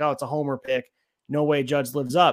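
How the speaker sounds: ordinary talk, nothing marked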